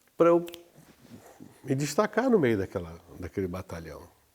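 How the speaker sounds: normal talking voice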